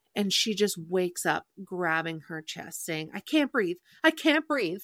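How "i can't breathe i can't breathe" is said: mock frantic, panicked, high-pitched cry. Retelling a scene where a character wakes up unable to breathe: imitating panicked screaming. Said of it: "In, like, a sweaty panic".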